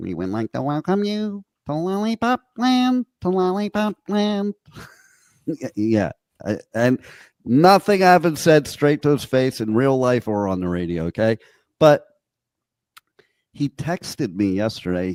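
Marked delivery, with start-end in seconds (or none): 0.0-4.5 tiny munchkin-like voice, very high-pitched. The speaker mimics how he mocked the mayor of Pipeland; munchkin voice. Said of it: "has a similar voice to the uh".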